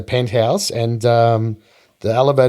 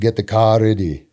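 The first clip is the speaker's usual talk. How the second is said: put-on gruff voice. Retelling a celebrity snubbing a sponsor dinner: good Arnold impression. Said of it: "That's a good impression".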